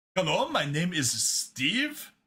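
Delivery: put-on Indian accent. Talking about scammers, the speaker does an Indian call center accent. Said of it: "the Indian call center dude".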